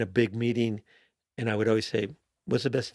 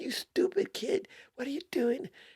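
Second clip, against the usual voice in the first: put-on very high, shrill, berating yell; 4 dB quieter than usual. Retelling a man reprimanding a kid in a bathroom: imitating a man yelling. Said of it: "yelling at the kid".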